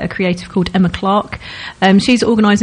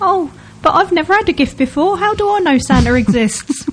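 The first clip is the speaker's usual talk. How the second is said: put-on old-fashioned Victorian English accent, child voice; 9 semitones higher than usual. Describing a music video's opening, the speaker voices a doubting child in a Dickensian child's accent. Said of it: "In that accent".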